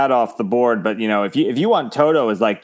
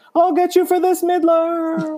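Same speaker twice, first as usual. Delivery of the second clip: very high, cartoonish yelled line. Describing a robot yelling as it falls through the sky, Simpsons character impression. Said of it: "sounded like the guy in The Simpsons who's like".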